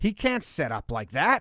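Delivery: plain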